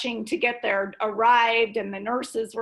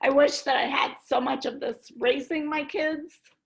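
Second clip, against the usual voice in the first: actually crying, tearful voice through the words; 3 semitones higher than usual. A mother tells young listeners she wishes she had known this: crying while speaking. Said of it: "I am crying".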